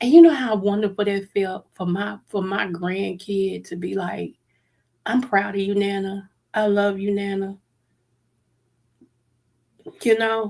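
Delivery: tearful, choked up, fighting back crying. A grandmother recounting her grandkid's words to her, holding back tears. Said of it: "try not to cry".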